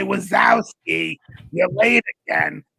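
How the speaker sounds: slow, rasping, croaky chain-smoker voice. Describing a lady who came to the window, the speaker quotes a line: Monsters, Inc. character voice. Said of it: "she sounded like the girl from Monsters".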